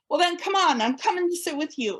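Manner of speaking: lovely, put-on British accent. Retelling an invitation at a VIP banquet: Mister Hart's British accent. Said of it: "in a lovely British accent".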